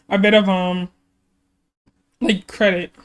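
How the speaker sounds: voice cracking. Giving credit to a member while going through an album, voice cracking. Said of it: "My voice is cracking".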